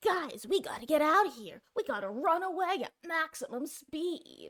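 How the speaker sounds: high-pitched, half anime character voice. Imagining the survivor Meg suddenly getting voice lines: half anime Meg voice. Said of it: "I gave her like a half anime voice".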